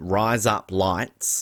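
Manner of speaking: Australian accent on the phrase. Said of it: "it sounds like you're saying razor blades in an Australian accent".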